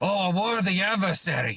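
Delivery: terrible, clumsy put-on South American accent. Imagining what the villain says on seeing the hero, in a terrible south american accent. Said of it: "That was a terrible accent. ... my South American accent needs work".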